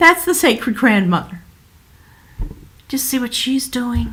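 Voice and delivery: voice catching with emotion. Describing an image to listeners, speaking choked up. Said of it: "Now I'm getting choked up".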